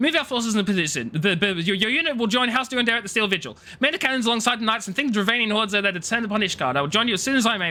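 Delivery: rushed, panicked delivery. Impersonating a character commanding forces as the assault begins, play Alphinaud giving panicked orders really quickly. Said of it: "my impersonation of Alphinaud giving orders really fudging quickly because he's panicking".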